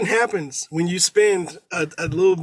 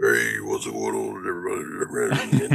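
wrecked, blown-out voice, very slow, swooping and creaky. Imitating how death metal singers sound in interviews: imitating a wrecked death metal voice. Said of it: "they have fucked their voice up doing this".

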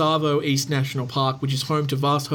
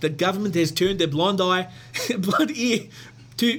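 put-on South African accent, higher, slower; 4 semitones higher than usual. Speaker doing a bit with another speaker, in a South African accent. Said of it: "I can do a South African accent".

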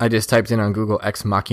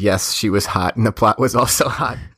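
plain

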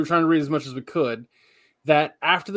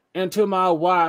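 put-on American Southern accent, higher; 4 semitones higher than usual. Retelling how an old will was read aloud: southern accent. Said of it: "it was a Southern accent 'cause they're from Kentucky".

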